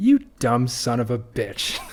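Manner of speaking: put-on thick Bronx accent with swooping pitch. Retelling what Atlas says when you kill Andrew Ryan, thick Bronx accent. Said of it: "he has like this thick Bronx accent".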